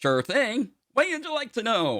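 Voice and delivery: very high-pitched put-on AI voice. Voicing a voice over the ship's comms greeting the crew: voicing ship AI Tonic. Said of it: "you hear a voice over comms going".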